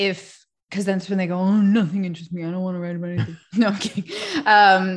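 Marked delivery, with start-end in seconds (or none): 1.4-3.4 put-on fast, sulky, sullen, dismissive teenager voice. Speaker imitating students when asked what interests them: mock-sullen student voice. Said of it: "that's my student voice".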